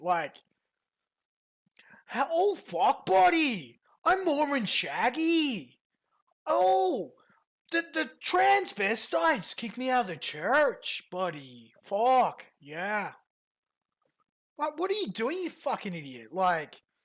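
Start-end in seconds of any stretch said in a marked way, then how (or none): 2.3-11.7 animated, high, swooping, sing-song ranting voice. Mocking how someone started talking like PPP: imitating Shaggy talking like PPP. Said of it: "he fucking started talking like P P P and Surf".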